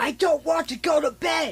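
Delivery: yelling, tantrum-like outburst. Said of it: "he shouts".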